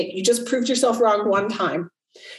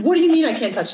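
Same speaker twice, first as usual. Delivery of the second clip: mock furious, indignant, livid, pitched-up outburst; 5 semitones higher than usual. Retelling a girl told she can't touch the cake, imitating someone livid. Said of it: "She was like livid".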